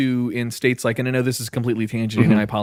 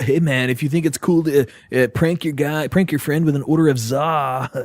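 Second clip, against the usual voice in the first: lazy stoner voice with "za" drawn out; 2 semitones higher than usual. Reading a written note aloud to the others, in a stoner voice. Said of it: "you got to read that like a stoner".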